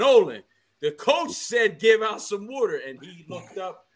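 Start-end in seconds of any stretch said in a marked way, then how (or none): 0.0-2.8 raised, high, loud shout calling out. Retelling calling out to Nolan so the speaker's voice would be heard, retelling a scream. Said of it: "And then I screamed at".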